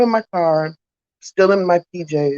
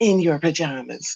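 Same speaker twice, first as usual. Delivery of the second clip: dry, mocking, pointed sarcasm; 4 dB quieter than usual. Retelling a neighbor's remark: imitating a sarcastic remark. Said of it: "really sarcastic the way she said it".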